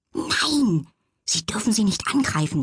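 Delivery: spoken as a sharp hiss. Warning a talking cat not to attack the chickens: hissed. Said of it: "zischte Lilly".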